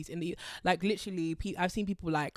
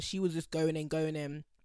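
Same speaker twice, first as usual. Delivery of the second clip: ordinary talk, nothing marked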